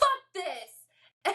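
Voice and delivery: mock exasperated, frustrated yell, pitched high. Retelling how she got frustrated while studying and yelled: imitating someone yelling. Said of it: "just yells".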